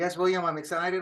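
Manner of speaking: lifeless, unexcited, flat deadpan delivery. Co-host answers the other host's prodding about the show: lifeless, unexcited delivery. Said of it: "you sound like the Charlie Brown".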